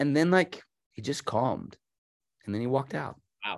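ordinary talk

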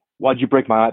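put-on serious, stern voice. Retelling confronting a worker over a broken ipad: retelling a mock stern question. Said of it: "I walk over very sternly".

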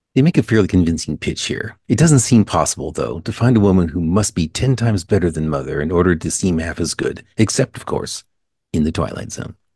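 put-on stiff, dry, stiff-upper-lip voice. Give the outro to the show with your co-hosts listening, in a Rod Serling voice. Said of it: "to fall into the Serling voice".

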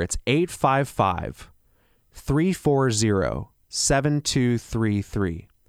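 slightly slowed delivery. Repeating a phone number for listeners, say it a little slower. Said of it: "I'll say that a little slower".

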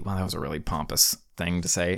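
ordinary talk

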